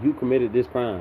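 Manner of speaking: ordinary talk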